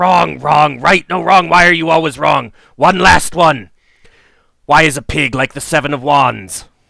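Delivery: loud, snarling, shrieking, growling monster scream. Narrator voicing a creature replying to a player's answer: growling, screaming creature. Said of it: "growls and screams out".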